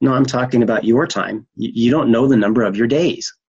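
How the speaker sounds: put-on stern fatherly voice, not mean. Speaker recounting what He told them, retelling in a stern fatherly voice. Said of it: "very sternly in a fatherly voice, not mean, but a stern voice".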